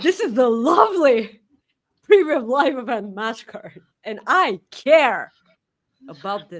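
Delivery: put-on, insincere promotional announcer voice. Presenting the premium live event match card: sounding like CM Punk, mock insincere. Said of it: "You sound like C M Punk".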